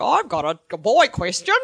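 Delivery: really bad put-on Australian accent, loud and slow. Imitating a caller phoning in a boy question: really bad Australian accent. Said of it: "really bad Australian accent who's like".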